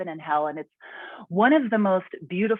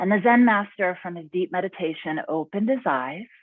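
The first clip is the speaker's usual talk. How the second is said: ordinary delivery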